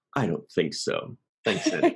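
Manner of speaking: firm, polite, final tone with swooping pitch. Retelling a character turning down a massage offer: imitating a hard shutdown.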